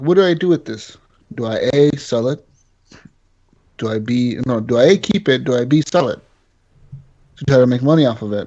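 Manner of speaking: plain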